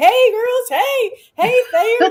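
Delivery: very high, loud hollering voice. Giving a shout-out, acting out a classmate in the room, imitating Colleen hollering loud. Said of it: "she's hollering loud".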